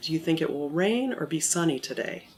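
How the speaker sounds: pitch falls at the end on today.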